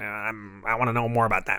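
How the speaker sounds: nasal put-on villain voice. Retelling a comic scene about the Emperor's agent: nasal Darth Vader voice. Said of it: "Great Vader voice".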